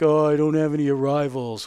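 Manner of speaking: put-on, mocking whiny tone.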